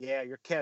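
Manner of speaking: acted, supremely confident, no doubt, matter-of-fact. Retelling how a player is told he is Kevin: imitating a confident delivery. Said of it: "the confidence of this man".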